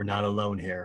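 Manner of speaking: hushed, low, kept-down voice. A player's character tells the group they are not alone, voice kept down. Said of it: "keep my voice down".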